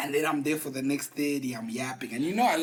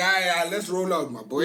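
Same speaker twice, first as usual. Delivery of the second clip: normal talking voice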